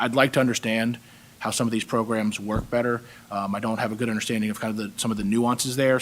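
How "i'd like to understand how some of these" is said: ordinary delivery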